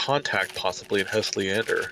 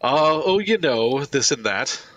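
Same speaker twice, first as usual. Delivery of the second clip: awkward, squirming, cringing, high, raised delivery; 6 semitones higher, 5 dB louder than usual. Voicing a contact who answers the call, cringing and awkwardly evasive. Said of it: "she cringes kind of very visibly and is like".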